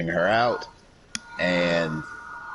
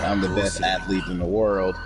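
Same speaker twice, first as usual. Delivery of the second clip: ordinary talk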